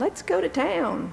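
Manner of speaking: put-on squeaky, very high, creaky tiny child voice. Retelling what a small child said while the parent worked in the house: tiny little voice. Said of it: "this tiny little voice said".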